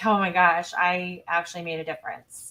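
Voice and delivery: ordinary talk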